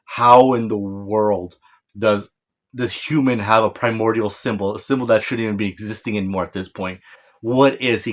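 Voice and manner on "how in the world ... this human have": plain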